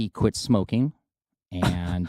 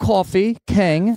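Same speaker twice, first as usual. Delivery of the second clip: very high, loud, proper put-on British accent; 12 semitones higher, 6 dB louder than usual. Asked by the other speaker to say something, doing a British accent. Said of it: "do a British accent".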